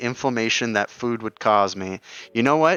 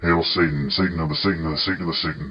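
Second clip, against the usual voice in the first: put-on monster voice, lower pitch; 7 semitones lower than usual. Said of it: "that was in Krampus's voice".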